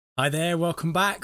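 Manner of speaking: loud shout. Host opening an episode, welcoming listeners back; shouting. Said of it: "Sorry for shouting".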